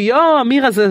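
put-on high, thrilled child voices calling out excitedly. Recalling kids spotting her across the street, acting out their excitement. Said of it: "הם אמרו את זה בהתלהבות".

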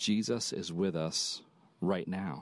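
slow, steady, calming, reassuring delivery. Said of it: "Let me try to say it like he would say it".

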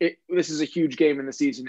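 ordinary talk, nothing marked

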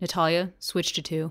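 gruff, low, rough voice. Recalling how the AD calls out to Natalia when things go badly: rough voice. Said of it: "get on with a rough voice and is like".

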